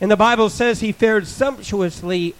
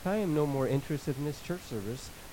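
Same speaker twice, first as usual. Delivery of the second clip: reenacted muttering under breath, much quieter; 5 semitones lower, 15 dB quieter than usual. Recalling lifting his hands during a church service, retelling a mumble under breath. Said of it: "I'd mumble under my breath".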